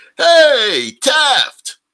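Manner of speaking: loud, high, long-carrying holler.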